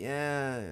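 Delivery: soft, drawn-out, sorrowful, mournful voice. Reading the story aloud, Ebony answers Draco's worried question, sad. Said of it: "I said sadly".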